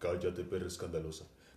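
very deep, low, flat, toneless put-on voice. Trying out a voice for a line, put-on deep voice. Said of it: "estoy haciendo la voz grave".

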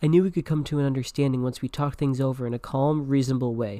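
plain

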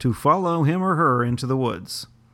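newsman reading voice, anchor-style delivery. Showing the other speaker how to read the article: newsman reading voice. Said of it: "I'll show you".

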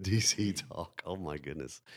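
slow speech, breaking into laughter mid-sentence. Reacting to another speaker's DC Talk joke, laughing while talking. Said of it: "I'm totally cracking up".

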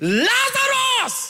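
very high, long-held, drawn-out preacher-style shout. Showing how Jesus called out, after saying he shouted: Jesus shouting. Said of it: "Jesus was a shouter".

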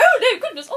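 put-on over-the-top posh English accent, very loud and high. Speaker acts out her own reaction when talking about this stuff, very English. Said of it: "I'm so English talking about this stuff".

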